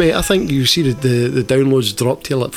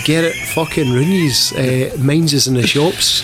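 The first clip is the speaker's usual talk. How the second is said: usual speaking voice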